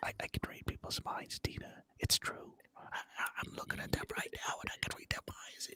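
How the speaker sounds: very quiet, breathy whisper under the breath. Speaking to a companion who asked to talk somewhere more private, whispering. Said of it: "You're whispering, but it's loud in here".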